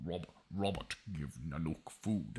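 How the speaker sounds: very low, deep monster yeti voice. Recapping a story and voicing the yeti asking for Robert: Nanook yeti voice. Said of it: "what would a yeti say?".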